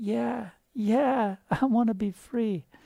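put-on tiny, high, slow voice like a seven-year-old. Retelling what a big man told him, speaker uses a little voice like a seven-year-old. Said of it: "this big giant with this little voice, like a seven-year-old".

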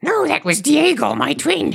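very high, swooping, rough and creaky creature voice. Questioned as Mr. Smeagol in a mock interrogation, denying it was him: Sméagol voice. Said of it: "The effort you're putting in this impression is amazing".

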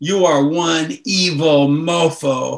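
mock very slow, drawn-out, in-your-face accusing tone. Recalling an intense man in their face, retelling an in-your-face accusation. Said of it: "like it was an accusation".

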